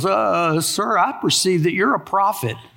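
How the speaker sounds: voice with a quiver running through. Retelling the woman's reply to Jesus; imitating a quivering voice. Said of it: "I can hear a quiver in her voice".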